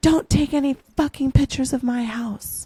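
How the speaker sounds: high-pitched, hostile shouting. Retelling how the house owner shouted about photos: imitating someone yelling. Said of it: "the owner of the house started yelling at me".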